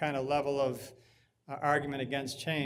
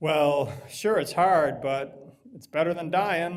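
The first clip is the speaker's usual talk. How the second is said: very loud, lightly sarcastic tone; 8 dB louder than usual. Demonstrating a tempting reply to someone who says changing would be difficult, a little sarcastic. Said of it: "I'm being a little sarcastic in my intonation".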